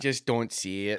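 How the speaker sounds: put-on thick, heavy Ontario accent. Quoting a Red Wings fan he talked to: thick Ontario accent. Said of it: "he's got this like thick Ontario accent".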